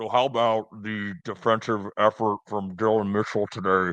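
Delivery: anonymous, electronically distorted, warped, disguised voice. Picturing a dark anonymous call-in show: imitating a disguised, warped caller voice. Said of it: "the thing where they warp your voice".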